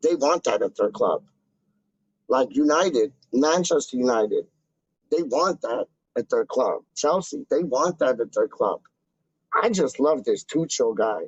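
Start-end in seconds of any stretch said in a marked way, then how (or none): 9.5-11.2 ironic sarcastic tone, meaning the opposite. Discussing football clubs and their players: sarcastic. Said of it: "I'm being sarcastic".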